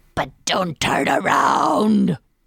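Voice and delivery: loud, rough, rasping creepy clown voice. Ending the podcast outro, slipping into a Pennywise impersonation. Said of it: "That was my Pennywise impersonation".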